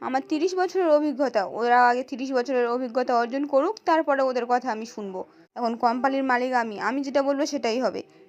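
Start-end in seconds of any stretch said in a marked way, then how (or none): none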